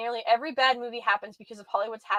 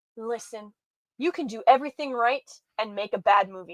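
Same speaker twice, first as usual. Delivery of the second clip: put-on serious voice. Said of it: "We're gonna be serious".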